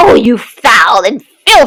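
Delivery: ordinary delivery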